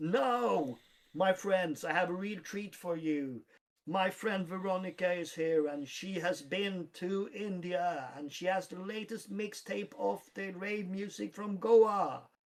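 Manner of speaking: hyped emcee voice, "now" stretched, announced big. Voicing a dj announcing a friend over the mic: dj shouting into the mic. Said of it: "open up the mic and shouts out".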